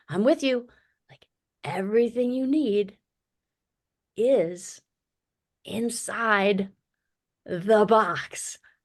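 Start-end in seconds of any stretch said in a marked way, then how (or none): 1.6-8.5 super slow, halting, spelled out word by word. Retelling repeating an instruction to her a second time, super slow. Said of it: "super slow".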